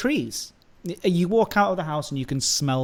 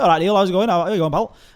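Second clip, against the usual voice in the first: put-on northern English accent, higher and louder; 4 semitones higher, 7 dB louder than usual. Showing how people up north talk: northern English accent. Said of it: "talking like, you know, I say".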